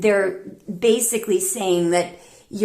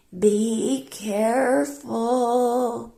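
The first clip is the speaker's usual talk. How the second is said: put-on very frail, weak, feeble voice; 4 semitones higher than usual. Retelling a dying mother's words to her daughter as she leaves, imitating a weak voice. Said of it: "says in this weak voice".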